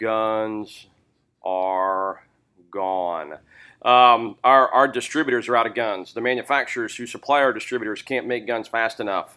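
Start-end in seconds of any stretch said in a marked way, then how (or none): 0.0-3.3 very slow, deliberate, drawn-out, stretched delivery. Stressing a point to listeners about sales, said slowly. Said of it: "I'll say that slowly".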